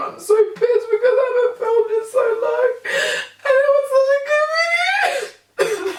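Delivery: crying while laughing. Upset that a filmed video was lost, crying while laughing. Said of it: "I'm so stupid for crying".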